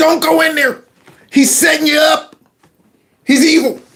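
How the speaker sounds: very high-pitched, screamed yell. Describing watching a movie villain, retelling screaming at the screen. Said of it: "I'm screaming at the screen".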